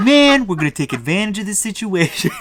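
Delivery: put-on New Jersey accent. Describing the X gang's leader eyeing a knot, in a New Jersey Mandarin accent. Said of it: "New Jersey Mandarin accent".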